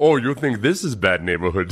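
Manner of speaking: put-on Russian accent. Retelling how a man answers someone confronting him, in a Russian accent. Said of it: "He responds in a Russian accent".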